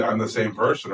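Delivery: normal talking voice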